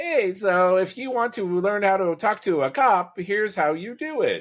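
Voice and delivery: very high, slow, drawn-out synthetic AI voice. Complaining about short online videos, mimicking the AI voice they all use. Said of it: "they all use the A I voice".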